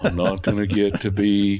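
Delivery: all-gloom, moping tone. Describing a character bemoaning missing out, speaker uses an Eeyore voice. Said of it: "I'm trying to say this in my Eeyore voice".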